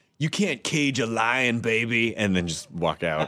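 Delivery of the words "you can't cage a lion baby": slow, obnoxious macho swagger. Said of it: "say something really obnoxious like".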